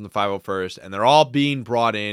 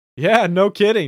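laughing while speaking, very high pitch; 11 semitones higher, 7 dB louder than usual. Retelling a favorite response from Anakin: imitating Anakin laughing. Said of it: "laughing at her and he's just like".

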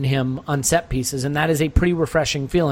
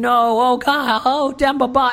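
mock very slow, high, drawn-out commentator scream; 10 semitones higher, 3 dB louder than usual. Retelling a radio call of a near miss, imitating commentators screaming. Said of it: "the call was basically them just screaming".

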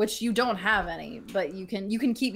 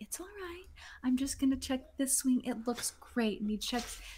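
hushed, tender, soothing murmur, light pitch; 5 semitones higher, 7 dB quieter than usual. Voicing a character checking a bird's wing: murmuring low and gentle. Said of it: "murmuring to you super low and gentle".

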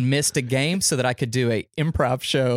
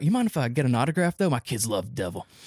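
put-on Southern American accent. Retelling what the team chiropractor asked, in a put-on southern us accent. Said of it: "I made him Southern all of a sudden".

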